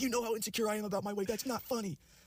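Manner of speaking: very high, screechy screaming outburst. Retelling how she reacted to a joke about her weight: imitating her screaming. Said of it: "she just starts screaming".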